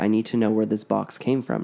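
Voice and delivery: normal talking voice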